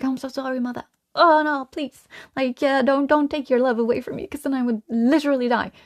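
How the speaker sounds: put-on frightened, pleading, begging little-kid voice. Acting out a scared child begging a parent: imitating a scared child pleading. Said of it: "the trigger of a child that's scared".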